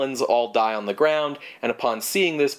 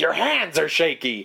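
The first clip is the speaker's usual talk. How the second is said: mock screaming at a higher pitch; 4 semitones higher than usual. Recapping a story, acting out the wife screaming at her husband, retelling a scream. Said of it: "is screaming at him, like".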